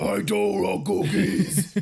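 put-on cookie-eating monster voice. A speaker recalling favorite characters does a Cookie Monster voice. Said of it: "He talks like that".

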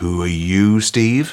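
put-on, mock-seductive sexiest voice. Podcast host introducing his co-host at the show's start, sexiest voice. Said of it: "in my sexiest voice mode".

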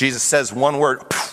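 plain

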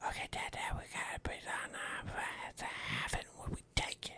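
put-on breathy, hushed whisper in a little girl's voice. Retelling what a daughter said in a blanket cave, imitating her whispering. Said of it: "and she's just whispering".

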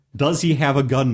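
ordinary talk

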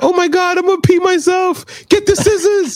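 speaking while laughing hysterically. Retelling a mother-in-law's words as she lay on the stairs: imitating someone laughing hysterically. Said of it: "on the stairs dying laughing".

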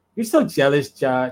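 put-on young woman voice.

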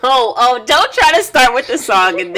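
high, loud, laughing teasing tone.

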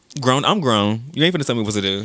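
ordinary delivery

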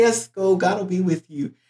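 heavy, acted-out sarcasm with falsely agreeable tone. Retelling the prophet's answer to the king about the war, imitating a sarcastic prophet. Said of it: "he's all sarcastic".

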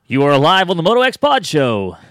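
booming radio announcer voice. Podcast host announcing an incoming call, in a put-on show-host voice. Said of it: "That's a good voice".

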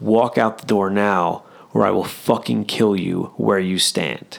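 whispered, breathy voice. Retelling a threat once whispered in a man's ear: retelling a whispered threat. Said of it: "whispered in his ear".

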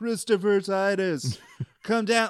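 high-pitched, announcer-style calling out. Recounting how a friend yelled to Christopher Titus, retelling a friend's yell. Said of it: "she starts yelling like".

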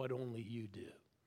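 imitated whispering. Retelling how God spoke in a still small voice: imitating God whispering. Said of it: "eventually whispers".

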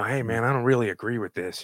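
whispering voice. Retelling coworkers in a crowded cafeteria: imitating someone whispering. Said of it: "they start whispering".

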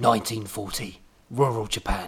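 Cockney accent, gangster voice, announcer-like. Announcing a movie-style flashback title, the speaker slips into a Cockney gangster voice. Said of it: "That sounded like your Cockney gangster voice".

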